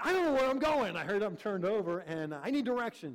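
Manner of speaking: heated, cross, loud outburst. Man retells what he said to Valerie while needing directions: retelling an angry outburst. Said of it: "with an angry voice".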